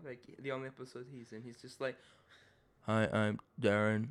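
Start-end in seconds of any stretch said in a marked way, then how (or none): 2.9-4.1 robotic, mechanical delivery, like a robot. Discussing a character in an episode: robotic Darren impression. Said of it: "He's kind of a bit of a robot".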